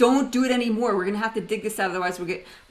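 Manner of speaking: angry, getting mad. Recalling a car stuck with wheels spinning, retelling angry words to the driver. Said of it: "I got so mad".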